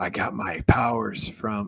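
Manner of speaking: slow, raspy, whispered hero voice.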